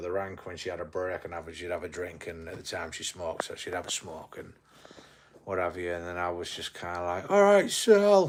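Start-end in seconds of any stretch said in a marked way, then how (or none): 7.3-8.3 full-throated, very high top-of-voice holler. Retelling calling out to a woman at the taxi rank: retelling a shout at top volume. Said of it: "top of my voice".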